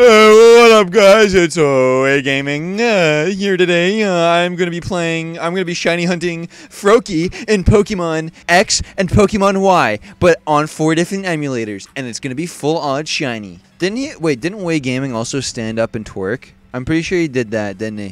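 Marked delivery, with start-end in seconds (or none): 0.0-13.6 slow, easing in, with lots of uhs. Imitating a YouTuber's video intro when asked: Way Gaming impression. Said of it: "here's my Way Gaming impression".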